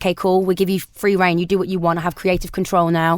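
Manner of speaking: ordinary delivery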